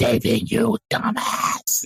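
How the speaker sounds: creepy, unearthly, eldritch otherworldly cat-creature voice. Voicing a talking cat dragging a character away: eldritch cat voice. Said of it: "in the most eldritch voice and says".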